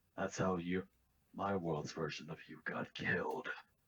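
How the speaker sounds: very low, deep stage whisper. Teleporting behind the princess, a character whispers to her: deep whisper. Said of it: "whispering in a deep voice".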